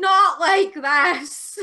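high, very loud, full-throated shout. Speaker retelling a companion shouting when the car stalled again; retelling a shout. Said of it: "and he shouted".

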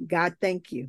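imitated whisper. Retelling own past prayer when praise would not come out: retelling own whisper. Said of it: "I whispered".

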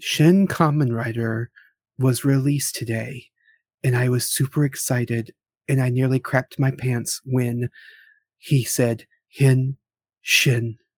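put-on radio-host voice. Told to work on an NPR voice, trying it out; mock NPR voice. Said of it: "You got to work on your NPR voice".

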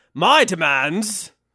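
loud put-on voice of a talking door. In a one-man show bit, the speaker voices a talking door in a different voice. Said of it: "in a different voice now".

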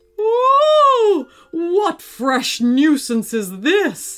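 loud, high dragon bellow, "ooh" drawn out. Reading a story aloud, the dragon reacts to a stamp on its tail, bellowing dragon voice. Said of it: "he bellowed".

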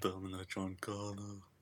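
soft, sleepy put-on action-hero voice. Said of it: "that's my sleepy Schwarzenegger, Schleepschnegger impression".

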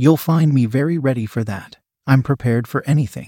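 ordinary talk

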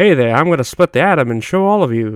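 put-on dated, old-fashioned 1940s way of talking. Imagining a 1940s nerd talking, in an old-timey 1940s voice. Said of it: "that's my 1940s voice".

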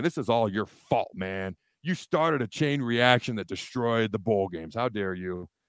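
half-sarcastic, half-joking, half-serious accusing tone. Blaming a player for ruining the bowl games: partly sarcastic. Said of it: "about forty-nine percent sarcasm in my voice".

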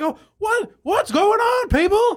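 really scratchy, very high-pitched rasping voice. Imitating a performer from his special before playing the clips, in a very scratchy voice. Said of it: "he gets very scratchy".

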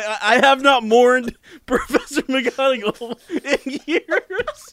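giggling while talking. Telling a sad story about a cat, laughing while talking. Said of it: "I'm sorry".

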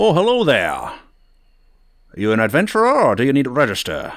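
put-on animated, swooping elderly character voice. Voicing an older guild clerk greeting adventurers: older human guild clerk voice. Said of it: "older human ... and he says".

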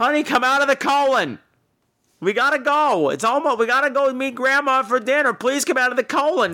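put-on very high, carrying yell. Retelling a dad calling his little boy out, imitating a dad yelling. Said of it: "This dad was yelling at his little boy".

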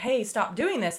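plain

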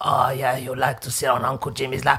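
low, dropped character voice. Acting out a skit where a man invites a girl onto his lap: imitating Uncle Jimmy. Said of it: "He's like".

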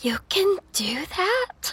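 barely audible, tiny, very high, slow whisper. She speaks to the listener after they shuffle over to check on her: tiniest whisper. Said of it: "In the tiniest whisper".

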